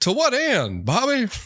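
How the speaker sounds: very high-pitched animated father voice. Pointing out the other speaker slipped into Hank Hill, then doing a Hank Hill impression. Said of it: "you slipped into a Hank Hill impression there".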